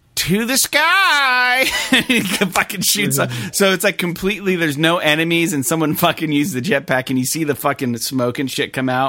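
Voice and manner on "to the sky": very high boastful voice, word "sky" stretched out. Describing a game's jetpack voice line, imitating a bragging game voice. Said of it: "it says it almost in, like, a bragging way".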